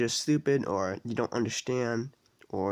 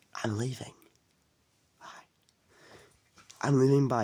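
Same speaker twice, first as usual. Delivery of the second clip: put-on whisper. Retelling how grandpa said goodbye: imitating grandpa whispering. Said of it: "my grandpa whispered".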